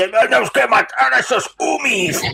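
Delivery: clichéd orc voice. Asked what voice you would give an orc, demonstrating: ridiculous stereotypical orc voice. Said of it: "una voz así como".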